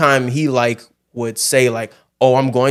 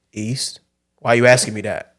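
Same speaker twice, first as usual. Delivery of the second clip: put-on condescending tone. Retelling a dad's answer to a question about directions: imitating a condescending tone. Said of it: "you didn't have to say it like I'm dumb".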